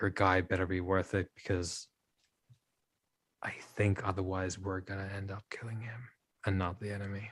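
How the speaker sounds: very quiet, hushed, barely audible half-whisper. Voicing a dwarf who steps up from the front row: half-whispering. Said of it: "whispers to you".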